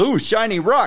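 very high-pitched put-on dim caveman voice. Joking that a co-host is like a caveman handed an ipad: caveman voice. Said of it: "to a caveman. He looks at it and goes".

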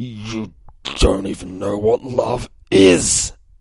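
slow, forced out through clenched teeth. Retelling a fight scene, imitating Monster Girl through gritted teeth. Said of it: "grits her teeth".

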